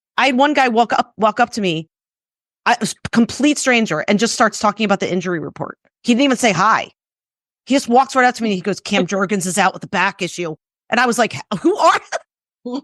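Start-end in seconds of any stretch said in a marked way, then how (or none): 8.8-10.6 put-on thick, heavy Philadelphia accent. Retelling a stranger walking up with injury news, in a thick Philly accent. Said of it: "the thickest Philly accent I've ever heard".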